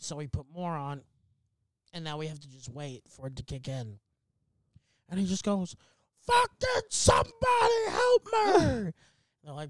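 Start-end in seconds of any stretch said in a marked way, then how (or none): 6.3-8.5 acted very high shrill yelling outburst. Telling a story about a man demanding a doctor, act out his yell. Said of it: "please, sir, stop yelling".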